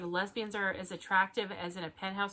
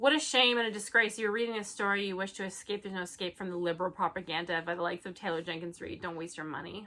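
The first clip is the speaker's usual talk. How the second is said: ordinary talk, nothing marked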